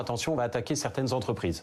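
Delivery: plain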